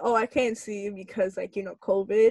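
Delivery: ordinary talk, nothing marked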